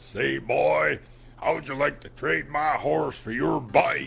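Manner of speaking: big put-on cartoon cowboy voice. Retelling how a man on a horse hollered at him, booming Yosemite Sam voice. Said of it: "hollers at me in a big booming voice, just like Yosemite Sam".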